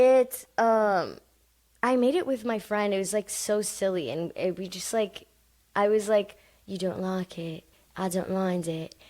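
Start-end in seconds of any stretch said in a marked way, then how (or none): 6.6-8.9 put-on British accent, quieter. Explaining a silly bit made with a friend, in a british accent. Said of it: "like literally like that. Like that's what I sound like".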